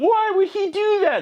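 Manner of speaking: put-on very high, slow girly whine.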